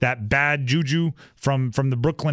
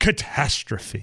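theatrical, overplayed, exaggerated single word; 4 semitones lower than usual. Calling the Suns' season a catastrophe: dramatic "catastrophe". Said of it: "you have to say it like that. Has to be dramatic".

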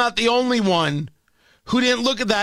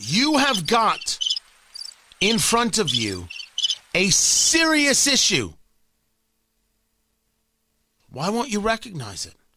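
raised, swooping voice with real force. Addressing the audience after announcing it, the speaker uses a raised voice. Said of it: "and now I mean to raise my voice".

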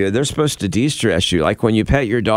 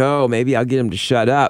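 plain

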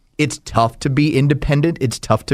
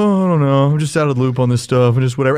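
put-on limp, checked-out voice. Retelling what the other speaker said when asked about signing day: Hoyt impression. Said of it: "Is that the Hoyt impression".

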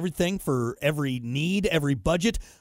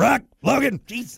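put-on raspy voice, higher and louder; 7 semitones higher, 4 dB louder than usual. Imitating his mother calling his name, like Marge Simpson. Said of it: "Sounds like Marge from The Simpsons".

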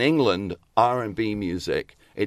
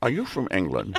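put-on Scottish voice; 4 dB quieter than usual. Retelling a party meeting, imitating Sean Connery. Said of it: "Can I, can I hear that some more?".

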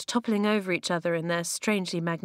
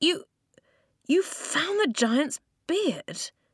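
astonished, halting stammer, high and slow; 8 semitones higher than usual. Reading a story, Flint seeing the hidden door behind the waterfall, stammering. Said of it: "he stammered".

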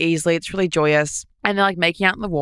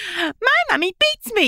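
put-on very high-pitched small child's voice. Comparing a remark to how little kids talk: imitating a little kid. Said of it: "when little kids go like".

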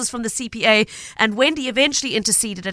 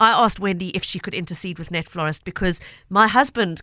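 ordinary talk

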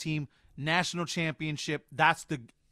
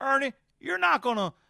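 put-on very high, too-thick, overdone Southern old-man drawl; 9 semitones higher, 4 dB louder than usual. Asked to redo his impression, overdoing the southern drawl. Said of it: "I went too Southern draw now".

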